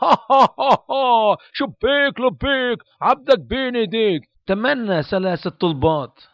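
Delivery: laughing, then a high, funny, silly cartoon voice. Describing the genie coming out of the lamp in Aladdin, funny Genie voice. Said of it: "they make this funny voice".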